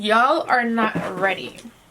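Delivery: bad, poor put-on American accent. Speaker showing off an American accent they call terrible, in a bad American accent. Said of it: "My American accent is so shit".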